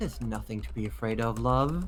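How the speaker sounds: close, whispered voice. Voicing a mysterious figure who reassures a player character: whispering in the ear. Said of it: "you hear a whisper in your ear that says".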